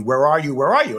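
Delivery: ordinary delivery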